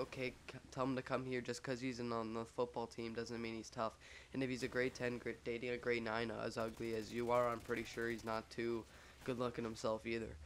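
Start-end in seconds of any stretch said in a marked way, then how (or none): none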